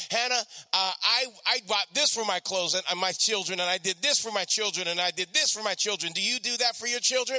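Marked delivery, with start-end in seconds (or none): none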